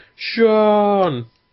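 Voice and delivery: high, loud screaming.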